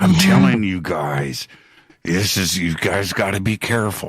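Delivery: imitated whisper. Retelling how an interviewee leaned down toward the camera: imitating a whisper. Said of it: "starts to whisper".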